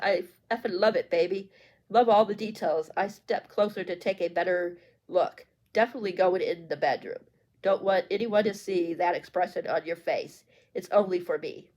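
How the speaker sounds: usual speaking voice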